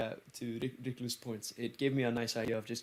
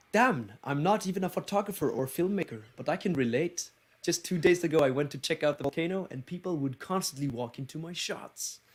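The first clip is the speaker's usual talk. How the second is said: Icelandic-accented English throughout, at a raised pitch; 5 semitones higher, 4 dB louder than usual. Saying the line when asked to: Icelandic accent. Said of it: "Say it in your, uh, Icelandic accent".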